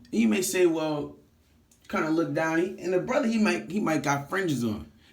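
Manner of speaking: ordinary talk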